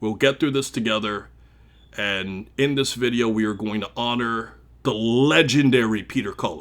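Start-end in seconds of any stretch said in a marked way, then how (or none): 4.8-6.6 legendary hit hard with heavy stress. Introducing a tribute video, with strong emphasis on legendary. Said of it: "I'm saying that with emphasis, all caps".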